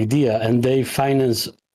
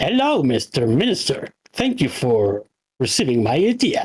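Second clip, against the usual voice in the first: silly put-on clown voice with swooping pitch. Retelling greeting a minister while wearing a red clown nose, silly put-on clown voice. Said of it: "I changed my voice like".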